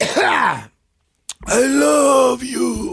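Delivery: very high-pitched, loud, belted sing-song declaration. Imitating how a fighter says I love you: Yoel Romero voice. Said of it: "that's a good impersonation".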